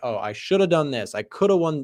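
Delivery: normal talking voice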